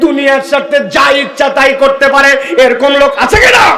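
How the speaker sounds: loud, high, preacher-style shout.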